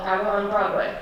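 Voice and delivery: ordinary talk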